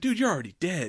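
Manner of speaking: crazed, completely wild outburst, voice up high. Retelling a prison interview from the film: imitating Otis going full batshit. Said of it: "full batshit".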